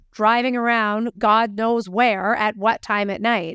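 ordinary delivery

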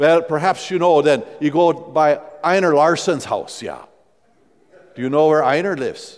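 put-on rural Wisconsin Norwegian accent, Midwestern brogue. Retelling a man giving directions to the New Hope Church, Norwegian Wisconsin brogue. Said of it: "in the best Norwegian brogue of rural Midwestern Wisconsin".

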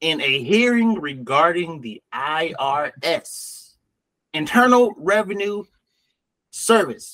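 slow, drawn-out, deliberate, careful over-explaining. Repeating a point to another speaker more slowly: speaking slower. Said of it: "I'll say it slower for you".

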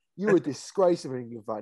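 usual speaking voice

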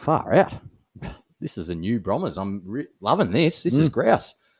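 ordinary talk, nothing marked

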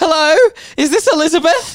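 put-on very high, very loud, shrill distraught voice. Retelling a wrong-number call, imitating a distraught caller. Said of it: "She sounded very distraught".

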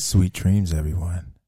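very low, soft, put-on sexy voice. Trying the sign-off after someone else did it well, the speaker tries to sound sexy. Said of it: "Why are we trying to be sexy?".

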